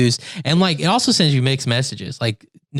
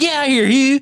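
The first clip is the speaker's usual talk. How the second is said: very high, commanding, dismissive belle voice; 12 semitones higher than usual. Retelling a line from a show her family watched, imitating how she said it. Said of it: "something about how she says it".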